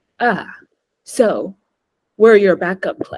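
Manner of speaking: flat deadpan delivery. Recounting a man's reply to the speaker's honest answer: retelling a deadpan remark. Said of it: "he kind of deadpan was like".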